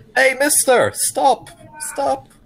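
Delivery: very high, loud calling shout. Playing Euphemia calling out to a barge across the river: shouting across a river. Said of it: "Euphemia is gonna shout out".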